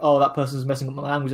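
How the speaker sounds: ordinary talk, nothing marked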